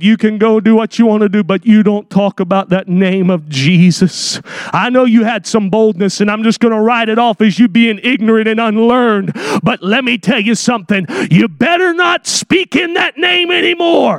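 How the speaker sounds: hateful, menacing tone, dripping with hatred. Speaker acting out those who forbade speaking in Jesus' name: retelling a hateful threat. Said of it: "We hear the hatred in their voice".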